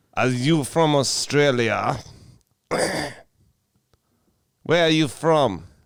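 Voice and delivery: put-on Bulgarian male voice. Doing an impression of a Bulgarian man when asked: imitating a Bulgarian man's voice. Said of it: "Can you do an impression?".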